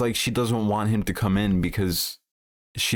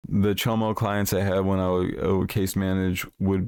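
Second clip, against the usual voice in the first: usual speaking voice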